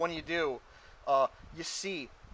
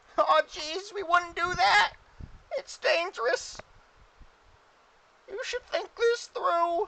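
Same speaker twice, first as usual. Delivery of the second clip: high, loud, slow goblin voice. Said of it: "All the goblins say".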